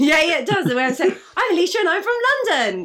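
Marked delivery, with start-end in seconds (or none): 1.4-2.9 high, swooping game-show contestant voice. Repeating own earlier introduction, mocking it: game show contestant voice. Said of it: "sounds literally like I'm on Cineplac".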